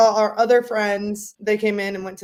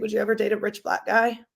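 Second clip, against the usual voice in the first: ordinary talk, nothing marked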